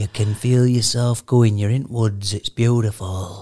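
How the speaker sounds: put-on soothing voice. Mimicking the annoying narrator of a sleep recording; imitating a sleep-story voice. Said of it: "trying to fall asleep to me talking like this".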